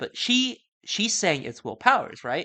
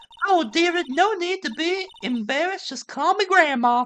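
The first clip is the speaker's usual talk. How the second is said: put-on very high Southern belle accent and voice; 13 semitones higher, 4 dB louder than usual. A witness asked for her name in a role-play, in a southern belle voice. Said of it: "Southern Belle voice".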